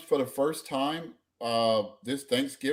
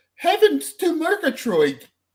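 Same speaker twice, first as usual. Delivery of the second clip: very high, booming, belted-out put-on British accent; 9 dB louder than usual. Recounting a funny Archer moment, doing Pam's fake British accent. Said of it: "They were faking British accents".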